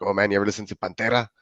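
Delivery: put-on thick Mexican accent. Retelling a rocker friend's question about a band: imitating a friend's thick Mexican accent. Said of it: "he had a real thick accent, like, from Mexico".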